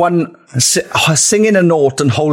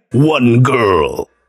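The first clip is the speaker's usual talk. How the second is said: movie trailer announcer voice, much lower; 3 semitones lower than usual. Pitching a way to record it, doing the movie trailer guy voice. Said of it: "We could do it like the movie guy".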